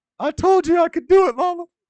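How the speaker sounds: very high, very loud put-on voice, belted out. Impression of a fighter after that fight: Leon Edwards impression. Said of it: "That was my impression of uh Leon Edwards after that fight".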